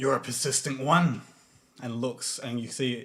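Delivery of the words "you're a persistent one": loud, very gravelly, ominous voice. A voice calls out from the darkness beside an alley, very gravelly and ominous. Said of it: "It's a very gravelly and almost ominous voice".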